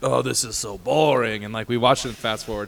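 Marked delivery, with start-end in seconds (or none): 0.0-1.4 slow, drawn-out cartoon voice. Retelling what dad said about a boring movie: Wario voice. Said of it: "That's me, a Wario, your dad".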